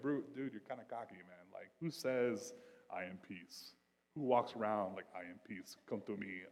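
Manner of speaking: bad mock impression, cocky tough-guy action-hero voice.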